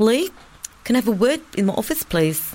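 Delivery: put-on New Zealand accent, slight lisp. Retelling what a New Zealand woman said to Lee, in a New Zealand accent. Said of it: "so I'm going to do the accent".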